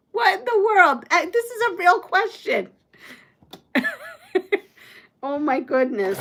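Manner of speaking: cracking up, laughing through the words. Reading out a golf question, cracking up while talking. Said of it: "This is cracking me up".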